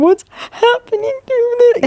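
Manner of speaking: crying, very high-pitched, slow and drawn out. Retelling finding a hemorrhoid after giving birth: retelling own crying. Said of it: "And I started crying, going".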